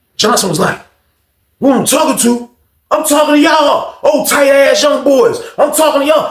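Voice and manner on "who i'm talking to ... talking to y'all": mock angry, loud, high shouting. Retelling an argument after someone told Johnson to calm down, imitating Johnson yelling. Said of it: "calm your voice a little bit".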